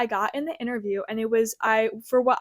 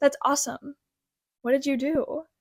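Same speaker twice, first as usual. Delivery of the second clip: put-on seductive, flirtatious tone; 4 semitones higher than usual. Retelling a job interviewer's follow-up question, imitating a seductive tone. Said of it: "so like in a seductive tone too".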